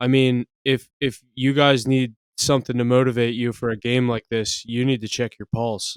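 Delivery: level, expressionless, flat monotone drone. Retelling what he said at his press conference on ESPN: monotone. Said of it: "saying in the most monotone voice".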